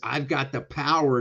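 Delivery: ordinary talk, nothing marked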